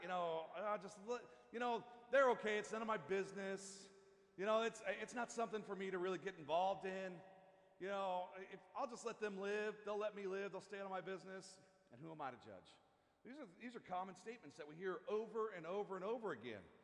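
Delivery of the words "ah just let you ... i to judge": plain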